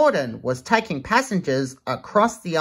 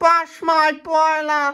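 very high, teasing with a laugh; 12 semitones higher than usual. Narrating a children's story, the narrator voices James teasing another engine, laughing. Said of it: "James laughed".

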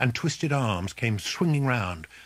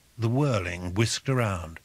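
ordinary delivery, nothing marked

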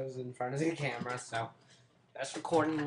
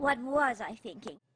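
put-on wicked witch voice; 11 semitones higher, 4 dB louder than usual. Asked to do an impression of a witch, the speaker answers in a Wizard of Oz witch voice. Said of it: "Do your impression of her".

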